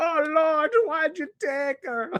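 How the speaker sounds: very high, fake, put-on Jamaican accent. Mimicking what people often say, in a put-on jamaican accent. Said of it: "affecting like a Jamaican accent".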